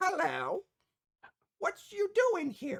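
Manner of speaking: very high, swooping, tiny fairy-dragon voice. Voicing a small fairy dragon who greets a player: small fairy dragon voice. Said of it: "this fairyish small looking dragon".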